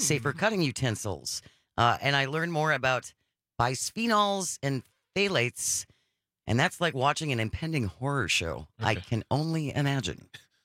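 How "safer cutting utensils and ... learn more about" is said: plain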